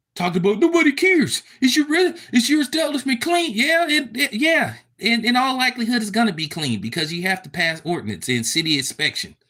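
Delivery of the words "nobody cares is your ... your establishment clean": mock ranting, higher. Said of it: "for him to be ranting the way he was".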